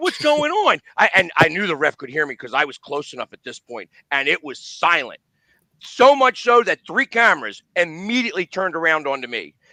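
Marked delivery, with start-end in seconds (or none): 0.0-0.8 mock, shrill, very high and loud yell. The speaker acts out yelling at the referee while everyone else was quiet, retelling his yell. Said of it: "I'm like".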